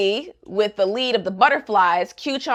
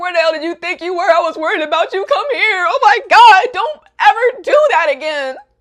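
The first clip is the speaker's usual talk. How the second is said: loud, high, concerned, worried yelling; 9 semitones higher, 7 dB louder than usual. Recapping a story, the speaker acts out a father yelling at a found child: retelling a worried dad's yell. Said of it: "Agatha's dad is yelling at Hana".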